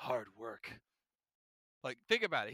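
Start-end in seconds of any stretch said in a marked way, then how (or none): 0.0-0.8 soft, quiet, adult-sounding voice, nearly under breath. Imitating Todoroki answering a question: Todoroki soft-spoken voice. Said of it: "he has that soft-spoken voice".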